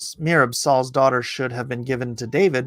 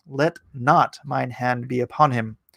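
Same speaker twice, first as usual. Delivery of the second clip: usual speaking voice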